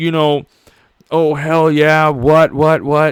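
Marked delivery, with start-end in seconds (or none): 1.1-3.1 aggressive, confrontational in-your-face taunting delivery. Imitating Stone Cold's catchphrases: Stone Cold impression, in your face. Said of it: "the Stone Cold".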